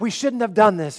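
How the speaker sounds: yelling. Recounting a wobbling boat ride, the speaker retells yelling back to the man teaching him. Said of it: "And I'm yelling back".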